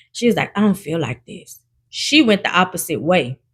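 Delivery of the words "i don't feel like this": hushed, quiet half-whisper. Retelling what a girl said before walking away: imitating a half-whisper. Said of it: "I heard her whispering".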